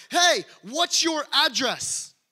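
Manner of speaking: loud, high, drawn-out, slow yell.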